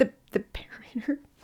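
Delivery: awed, soft, hushed whisper, not breathy.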